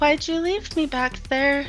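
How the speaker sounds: high, eerie, creepy ghostly voice. Voicing a ghostly apparition appearing before a guard: creepy ghost voice. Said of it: "creepy and just".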